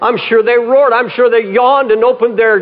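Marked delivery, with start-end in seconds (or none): none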